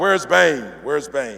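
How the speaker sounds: eager, combative, demanding tone. Retelling a Batman scene, Batman showing up: as Batman. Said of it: "He's like".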